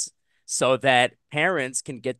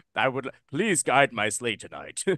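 serious, un-jolly voice. Mocking how someone plays Santa, in an un-Santa-like Santa Claus voice. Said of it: "That's not a Santa Claus voice".

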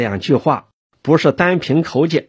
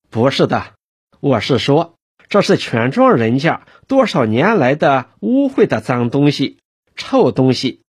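ordinary delivery

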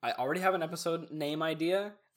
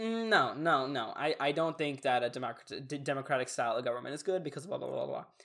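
ordinary delivery

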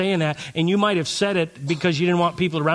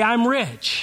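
bright, grateful, believing, pitched-up tone; 6 semitones higher than usual. Leading listeners to repeat the line: smiling, with gratitude. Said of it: "say it with a smile on your face and a little gratitude".

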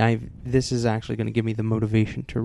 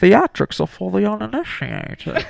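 very high, animated comic voice with loud swooping pitch; 10 semitones higher, 6 dB louder than usual. Doing a movie villain line as a comic impression: John Cleese doing Bane. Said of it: "That was John Cleese as Bane".

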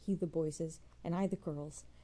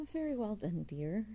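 gentle, soothing, calming reassuring voice; 4 semitones higher than usual. Narrator reads his reply to a woman who fears his anger, soothingly. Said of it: "he said soothingly".

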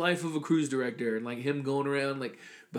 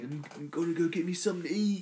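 casual put-on British accent; 3 semitones higher, 4 dB quieter than usual. Retelling a scottish vlogger's daily videos, imitating a british accent. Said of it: "That's a British accent".

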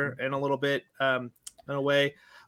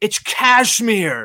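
terrible, very loud, high-pitched, badly belted put-on voice; 7 semitones higher, 10 dB louder than usual. Picturing a movie line said by Nicolas Cage: horrible Nicolas Cage impression. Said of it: "That's a horrible impression".

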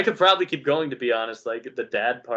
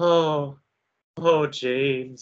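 acted winded, breathless, barely recovered voice; 3 semitones higher than usual. Retelling game dialogue where Catherine answers James after giving birth, imitating Catherine sounding winded. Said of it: "because she's like winded from giving birth".

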